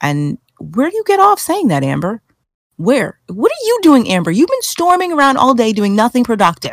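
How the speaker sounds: acted worked-up, loud tone. Addressing amber about what she said, with a raised voice. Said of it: "I'm raising my voice".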